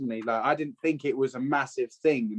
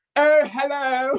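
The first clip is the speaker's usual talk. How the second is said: very high, posh, queenly phone voice; 13 semitones higher, 5 dB louder than usual. Describing how her voice changes mid-recording, she demonstrates posh queen talk. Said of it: "queen talk, like".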